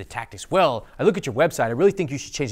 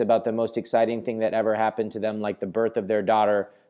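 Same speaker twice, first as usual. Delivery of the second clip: low, flat, dull, unvaried monotone drone; 4 semitones lower than usual. Coaching on people who talk about exciting events without emotion: flat monotone. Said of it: "they remain in the same flat monotone, speaking like this".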